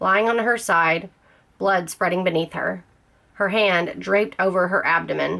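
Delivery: ordinary delivery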